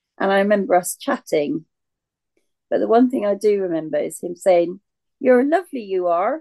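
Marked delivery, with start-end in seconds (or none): 5.2-6.4 put-on West Country accent, pitched up. Retelling what he said while chatting in the pub: imitating a West Country accent. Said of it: "Oh, the West Country accent".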